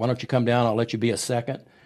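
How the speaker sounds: plain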